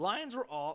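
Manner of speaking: voice cracking. Speaker previewing the Lions at Cowboys matchup, voice cracking. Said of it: "my voice is cracking".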